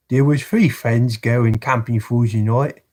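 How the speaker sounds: Cockney accent. Reading a brief horror story aloud in a Cockney accent. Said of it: "Read in a Cockney voice".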